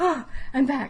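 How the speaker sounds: gasping for air. Narrating a character who comes back after being possessed, gasping for air. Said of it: "he kind of like gasps for air".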